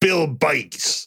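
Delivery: attempted put-on New Jersey accent. Reading out a list of names, trying a New Jersey accent attempt. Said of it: "I'm gonna try for New Jersey Richard".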